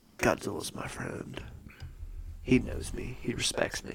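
soft, hushed, unvoiced whisper. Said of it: "And he's like".

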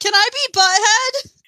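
shrill, high-pitched shouting. Retelling a girl in the back calling out: imitating someone yelling. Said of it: "this girl in the back just yells".

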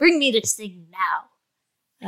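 snippy, bossy voice. Imitating the oldest child's demands from when he was younger: imitating a snippy demand. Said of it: "He used to be very snippy".

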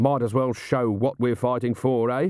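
ordinary delivery

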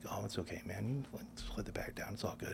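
soft, hushed whisper, very close.

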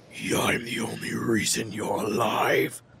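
low, menacing voice with ominous overtone. Narrating a scene, voicing a man whose voice has a loud, menacing overtone. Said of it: "his voice with this loud, menacing overtone".

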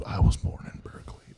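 soft, unvoiced whisper.

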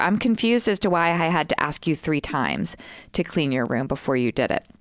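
ordinary delivery

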